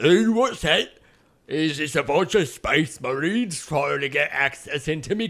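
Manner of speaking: put-on posh, very proper English gentleman accent. The game master voices the Porter, a comic Elizabethan character, at the peephole: Stephen Fry-style proper Englishman. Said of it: "sort of a Stephen Fry style proper Englishman".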